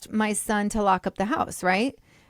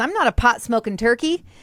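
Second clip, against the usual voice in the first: mock confident, self-assured delivery with total conviction; 2 semitones higher, 5 dB louder than usual. Retelling what a first serious boyfriend said about pot: imitating someone saying it confidently. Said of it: "he said it with such confidence".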